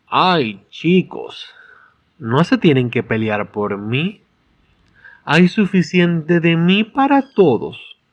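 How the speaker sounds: slow, sultry, seductive, extremely feminine voice. Discussing a book, the speaker quotes Jessica once her muzzle is removed: seductive Jessica voice. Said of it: "lo hace en un tono de voz seductor".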